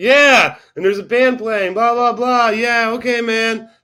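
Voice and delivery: loud, high-pitched shouting.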